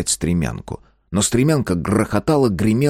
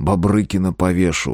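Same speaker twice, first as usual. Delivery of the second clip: ordinary delivery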